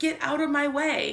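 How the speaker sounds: plain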